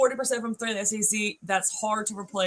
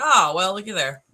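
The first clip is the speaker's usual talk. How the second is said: put-on sarcastic tone; 7 dB louder than usual. Retelling getting the news sent within a minute, a sarcastic remark. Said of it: "I'm being super sarcastic".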